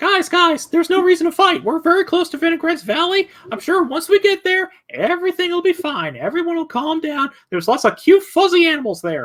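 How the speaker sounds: very high, squeaky, bouncing cartoon voice. Voicing Crackers urging the group not to fight, in a Mickey Mouse-like voice. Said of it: "the more I hear and see him morph into Mickey Mouse".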